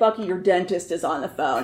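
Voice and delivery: nasty, mean, teasing, needling tone. Retelling teasing a coworker about a phone call: imitating own mean teasing. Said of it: "if I was feeling especially mean".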